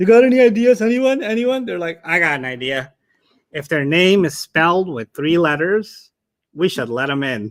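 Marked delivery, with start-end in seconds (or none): 2.0-7.5 put-on cartoon-character voice and accent. Acting out people at a barbecue proposing an idea: Squidward accent. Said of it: "That's like a Squidward accent".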